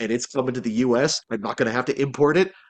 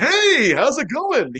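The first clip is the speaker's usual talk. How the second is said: hammed-up, very high, slow, drawn-out, showy delivery; 13 semitones higher, 4 dB louder than usual. Describing the role the speaker played, demonstrating Mr. Gunpla's showy loudmouth voice. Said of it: "he's like kind of like a very showy loudmouth".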